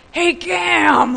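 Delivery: loud, gruff, high-pitched voice.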